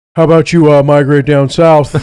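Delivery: put-on low, deep voice with Midwestern accent. Quoting how a man phrases his invitations, in his deep Midwestern voice. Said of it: "he has this deep voice like this".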